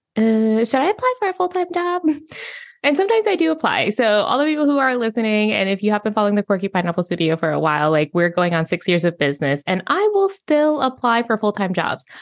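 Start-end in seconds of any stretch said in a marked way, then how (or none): 0.2-2.0 high, wondering, musing voice. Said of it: "moments where I'm like".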